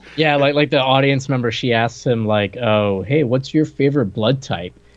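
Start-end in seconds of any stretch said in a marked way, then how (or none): 2.6-4.7 put-on mocking, teasing tone. Retelling an audience member's question to a supposed vampire: imitating a mocking question. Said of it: "she says it kinda, like, to, like, make fun of him".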